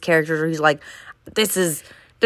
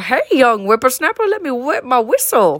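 put-on old man voice, higher pitch; 5 semitones higher, 3 dB louder than usual. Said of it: "the old man one that you".

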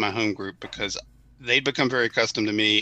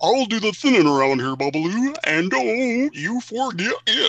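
very high, loud, swooping cartoon character voice; 12 semitones higher, 5 dB louder than usual. Doing a voice the speaker says no one under 40 will recognize, Hanna-Barbera cartoon voice. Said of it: "a Hanna-Barbera character voice".

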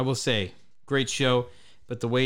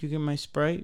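sad, forlorn little voice; 3 semitones higher than usual. Retelling being asked about a Sprite, imitating Reed sounding sad. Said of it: "all sad".

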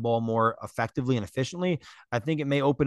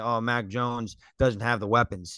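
normal talking voice

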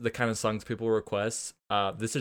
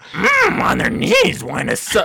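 very high, loud, swooping, rasping croaking squawk; 9 semitones higher, 12 dB louder than usual. Asked to do the lyric as Marge Simpson, it comes out as a Yoda-like voice. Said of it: "That was fucking Yoda".

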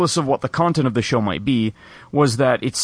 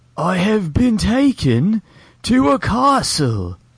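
clumsy fake British accent, very slow and pitched up; 6 semitones higher than usual. Mocking an actor's role in Dracula: Keanu Reeves's bad British accent. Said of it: "him being like".

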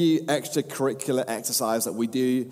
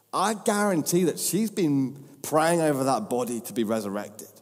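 plain

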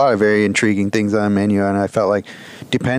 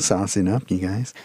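creepy way of saying it; 6 dB quieter than usual. Telling the other speaker about asking for sauce, creepy tone. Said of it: "a creepy way".

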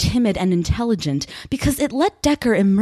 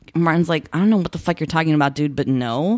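usual speaking voice

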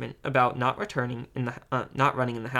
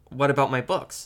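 plain reading voice

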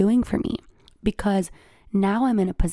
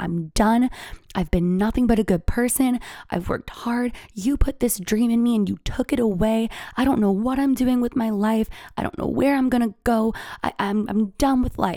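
mock, fed-up, at-the-end-of-it yelling rant; 2 semitones higher than usual. Retelling yelling at God while driving: imitating own past yelling. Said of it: "I was yelling".

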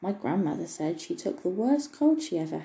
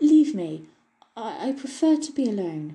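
shaky, trembling, raised voice straining for dignity; 4 semitones higher, 5 dB louder than usual. Narrator reads the girl's line to the elf, in a trembling voice. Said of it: "it was with a trembling voice".

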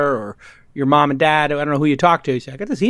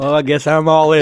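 put-on, exaggerated twangy accent; 4 dB louder than usual. Imitating Bill Gurley at the poker table: Bill Gurley impersonation with twang. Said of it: "That's my Bill Gurley impersonation".

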